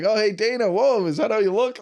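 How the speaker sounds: put-on silly, playful teasing. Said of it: "And I'm being silly".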